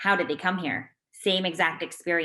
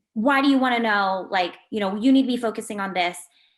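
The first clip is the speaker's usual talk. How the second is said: aggressive, confrontational lashing out in a raised voice; 4 semitones higher, 5 dB louder than usual. Retelling how parents react when asked about their stories: imitating an aggressive tone. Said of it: "aggressive tone".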